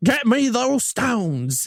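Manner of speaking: slow, drawn-out Southern villain voice. Quoting the Southern villain's line from the movie: imitating Gary Oldman's Southern villain. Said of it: "He's Southern".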